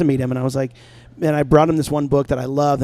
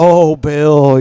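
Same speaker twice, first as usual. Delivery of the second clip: big deep put-on voice, louder; 9 dB louder than usual. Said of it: "that big old deep voice".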